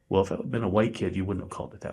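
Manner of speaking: muttering under breath. Retelling what was said to the referee: imitating muttering under breath. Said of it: "under my breath".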